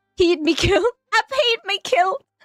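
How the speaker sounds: bad, failed Scottish accent, pitched high. Attempting an accent while chatting about cold weather: bad scottish accent. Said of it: "I can't do a Scottish accent".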